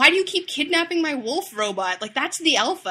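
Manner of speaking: play-acted outraged, furious, angry, accusing tone. Retelling a story scene where a character is always furious: imitating a furious character. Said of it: "Derek is always furious".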